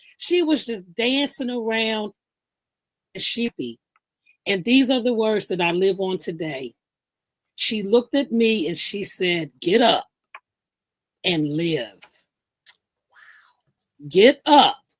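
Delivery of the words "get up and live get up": put-on motherly voice. Recalling the words she said to the speaker at church, imitating her mother voice. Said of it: "In that mother voice".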